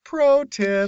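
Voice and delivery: lively, bouncy, high, swooping put-on voice. After saying a voice isn't distinct, the speaker tries a Lucas voice impression. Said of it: "maybe I can do Lucas's voice".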